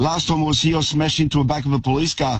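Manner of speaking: normal talking voice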